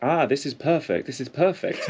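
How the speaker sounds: put-on English accent, high-pitched. Retelling how a woman nearby mimicked the speaker's accent, imitating an English accent. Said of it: "imitating my English accent".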